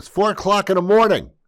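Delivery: very high loud yell. Telling Ron a story about going to a store, yelling. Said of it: "I'm sorry to yell at you".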